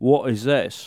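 put-on rough British accent. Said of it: "this is sort of a British accent".

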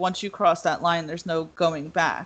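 ordinary delivery

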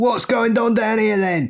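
fake London accent, squeaked very high. Asked whether to do an accent, answering in put-on london accent. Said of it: "do I have to do my London accent?".

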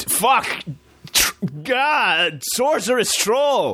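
very high, sharp yelp with "God" drawn out. Storyteller voicing an adventurer who spots a sorceress troll, yelping out. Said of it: "yelps out".

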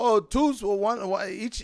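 put-on Chinese accent, high and slow. Retelling what they said when he ordered double: imitating their accent. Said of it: "not trying to be disrespectful with the accent".

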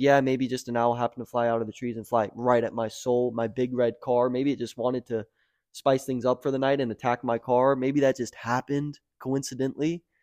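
normal talking voice

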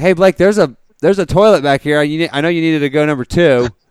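loud, carrying voice. Retelling leaning over on the airplane to tell Blake: retelling saying it loudly. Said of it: "kinda loud".

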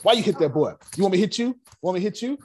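put-on very high, nagging, scolding grandma voice. Acting out what the speaker's grandmother always said to them; imitating grandmother. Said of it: "I'm my grandmother. She me".

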